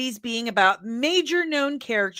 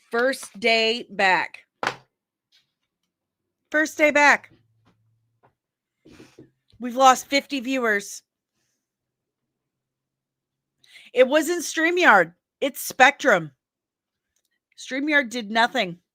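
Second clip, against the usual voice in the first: angry, exasperated, fed-up ranting; 2 semitones higher, 3 dB louder than usual. Speaker blaming Spectrum, not StreamYard, for losing viewers on the first day back, angry. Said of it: "I'm so angry right now".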